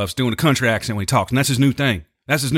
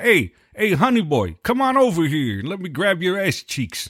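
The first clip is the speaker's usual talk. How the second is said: put-on crude, high-pitched, drawn-out old-man voice; 6 semitones higher than usual. Mocking a name by acting out an old guy calling to someone: imitating an old guy mocking. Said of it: "like an old guy".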